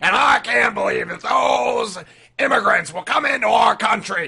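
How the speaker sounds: yelled hoarse and high. Imitating the radio host who talks like this: imitating Alex Jones. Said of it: "the guy that talks like this".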